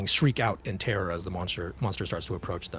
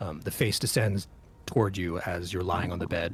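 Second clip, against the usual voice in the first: usual speaking voice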